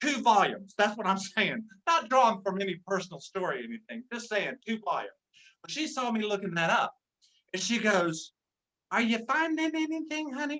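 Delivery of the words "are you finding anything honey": very sweet, soft, quiet, high-pitched voice. Speaker retells what she asked while he looked a word up, imitating sweet, quiet voice. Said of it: "Real sweet and quiet".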